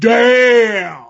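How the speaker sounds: "damn" said loud, high-pitched and drawn out. Retelling Farouk smoking a cigar and reacting: Farouk impression. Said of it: "Great Farouk impression".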